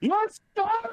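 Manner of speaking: loud, shrill yell pitched very high. Character barrels through the group, grabs him and picks him up; yelling loudly. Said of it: "You yelled too loud".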